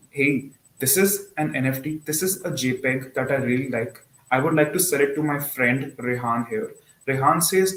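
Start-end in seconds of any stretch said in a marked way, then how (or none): none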